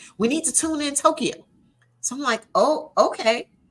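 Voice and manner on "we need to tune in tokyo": put-on, very urgent, pressing tone. A speaker retells what others kept demanding, imitating their urgent tone. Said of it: "they would say it with such such urgency".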